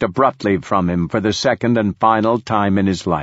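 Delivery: plain reading voice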